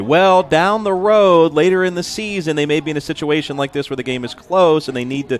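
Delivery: heavy sarcasm. Speaker mimics the remark he always makes in basketball, retelling in a sarcastic voice. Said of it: "Do you say it in that voice?".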